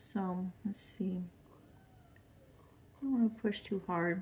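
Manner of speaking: voice dropped to a soft, hushed whisper. Speaker demonstrates a uv resin project while working on it, whispering. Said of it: "I don't know why I'm whispering".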